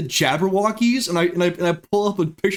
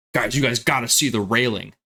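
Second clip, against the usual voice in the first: mock-frantic, hurried delivery; 7 semitones lower than usual. Retelling how a friend came back and called the group over, imitating a frantic hurry. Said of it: "in like a frantic hurry".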